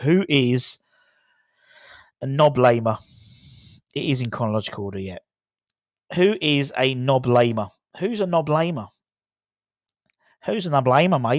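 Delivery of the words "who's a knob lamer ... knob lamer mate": put-on Australian accent. Reading out a quiz anagram to viewers in a put-on Australian accent. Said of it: "I'm speaking like an Australian now".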